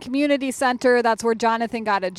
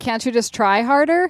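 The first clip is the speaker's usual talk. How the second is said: ordinary delivery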